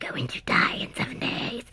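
eerie, creepy, breathy whispered voice. Retelling a scary TV ring story, the speaker does the creepy voice. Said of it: "a creepy voice says".

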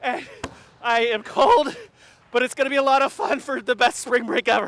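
out of breath, gasping for air, panting. Just arrived after racing up the stairs, out of breath, gasping. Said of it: "as you gasp for air".

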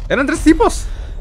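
high, loud, startled alarmed yelp.

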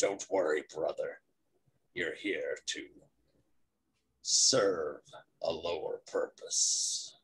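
deep, low, hushed guttural voice from the throat. Narrating a tabletop game, voicing figures passing by the crates: deep guttural voice. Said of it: "deep guttural voices say".

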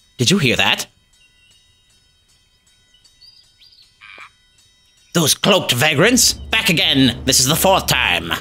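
startled, jumpy, alarmed outburst. A character, after saying goodbye to a stranger, hears something, startled.

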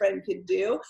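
ordinary talk

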